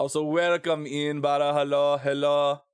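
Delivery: deliberately bad French accent. Gaming stream host welcoming someone in, in a terrible Remy French accent. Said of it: "Do not mind my terrible French accent".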